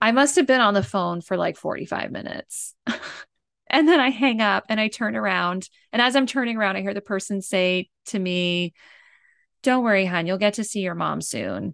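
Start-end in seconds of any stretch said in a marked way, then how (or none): 9.6-11.7 dripping, really sarcastic tone. Retelling what a man in the phone line said, imitating a really sarcastic man. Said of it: "But he was really sarcastic about it".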